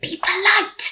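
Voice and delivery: hissing it out. Watson, the sidekick, tells Sherlock how to behave at the door, hissed. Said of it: "hissed Watson".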